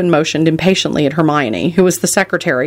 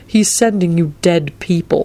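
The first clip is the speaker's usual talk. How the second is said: ordinary delivery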